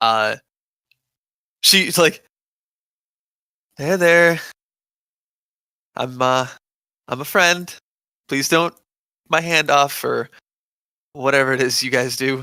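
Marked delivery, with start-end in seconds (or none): 3.8-12.4 quiet, nervous, soft and hesitant. Voicing a character gently approaching a horse: quiet and nervous. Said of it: "quietly, like, uh, s-, and, and slowly".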